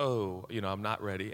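normal talking voice

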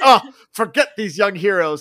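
loud, disgusted outburst. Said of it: "throws his hands up in disgust".

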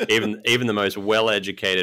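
ordinary talk

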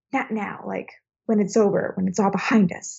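dark, menacing, sinister, ominous line reading. Discussing a film remake, the speaker reenacts an actress's line, mock-sinister like Daisy Ridley. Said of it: "she says it very sinisterly".

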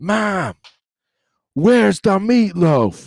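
put-on very high, loud, very drawn-out toddler yell. Retelling how a son wakes up in his crib: imitating Evan screaming. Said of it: "he wakes up now screaming".

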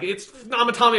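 very high, loud, exasperated yell. Retelling being frustrated at a game's characters: imitating screaming at the game. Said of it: "just screaming at the game".

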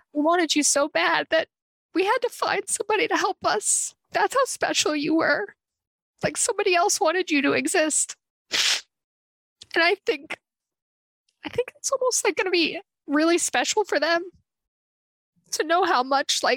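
crying while talking. Explaining to another speaker how the children will hear about it, crying while talking. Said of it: "you weren't supposed to cry".

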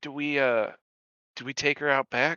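hushed whisper. Playing a character, whispering a question to Hazard. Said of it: "I guess I just whisper to Hazard".

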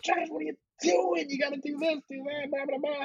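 acted, very high-pitched screaming. Retelling a friend yelling at him during a game mission, imitating Marty screaming. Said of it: "Marty would be screaming at me like".

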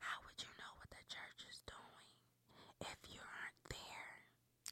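hushed, breathy, slow whisper, barely audible. Near the end of an episode, saying something just in case: whispering. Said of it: "I'm going to whisper this just in case".

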